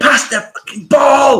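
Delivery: put-on very high, shrill, frustrated, angry screaming. Recalling shouting at a player who won't pass, retelling a scream. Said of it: "you'll see me screaming".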